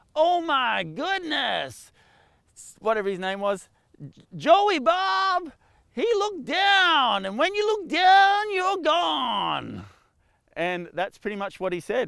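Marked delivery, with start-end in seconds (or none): 0.1-9.8 put-on very high, slow American commentator accent. Quoting a rodeo commentator on a bull rider, imitating his american accent. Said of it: "in his American accent".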